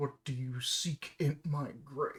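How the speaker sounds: rough, gravelly voice, echoing as if from stone. Voicing a statue speaking out of the stone, gravelly voice echoing from stone. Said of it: "A gravelly voice echoes out from the stone".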